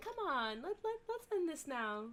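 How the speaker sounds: softest possible voice, very hushed and gentle. A player character gently touches the halfling to persuade him, very soft voice. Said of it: "with the most softest voice that I can".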